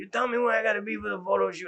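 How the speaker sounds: rough, gravelly voice, pitched high. The speaker retells an actor whose scene was cut, in Keith's gravelly voice. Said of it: "he's got a gravelly, tone of voice".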